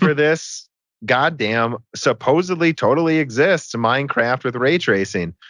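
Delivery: slow drawl with heavy mocking sarcasm. Talking with another speaker about a missing release date: sarcastic tone. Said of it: "that in a sarcastic way".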